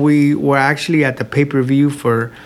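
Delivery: ordinary talk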